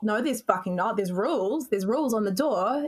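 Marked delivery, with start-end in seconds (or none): none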